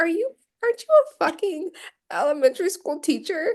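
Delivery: stunned, incredulous. Retelling own reaction to a teacher in the film: retelling own shocked reaction. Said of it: "I was so shocked".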